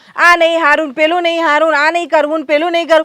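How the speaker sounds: normal talking voice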